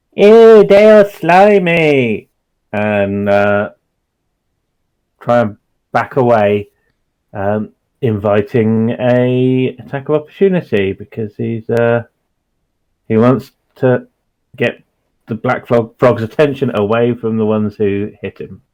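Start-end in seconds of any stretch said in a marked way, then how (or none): 0.2-2.3 high, loud, slow yell in character voice. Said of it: "he will then yell out to the others".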